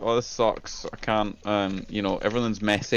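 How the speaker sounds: normal talking voice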